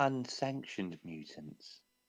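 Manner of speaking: very soft, slow, deliberate, drawn-out words. Voicing a character who shares alarming news: saying it really slowly. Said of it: "she's just gonna say it, like, really slowly".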